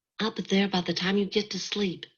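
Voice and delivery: carrying stage whisper. Narrator reads a woman answering a man from the dark kitchen, in a loud whisper. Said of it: "she said again in a loud whisper".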